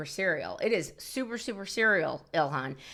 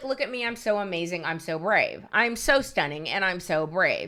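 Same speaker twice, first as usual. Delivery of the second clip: sneering, sarcastic, self-admiring parody delivery. Retelling a speech by a woman on stage: mocking imitation of her speech. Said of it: "And she's like".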